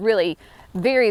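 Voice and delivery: ordinary talk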